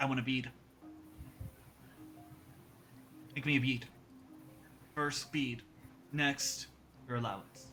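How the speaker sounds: hushed, breathy, whispered tiny creature voice. Voicing a little kobold who demands a bead: kobold character voice. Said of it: "He's a little kobold".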